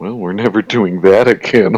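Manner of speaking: muttering under breath. Acting out a grumble after waking on someone's back: muttering under breath. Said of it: "mutter under my breath".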